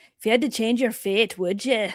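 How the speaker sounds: put-on Scottish accent. Trying a classic movie line, the speaker does a Merida accent from Brave. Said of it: "That's a hard accent to do".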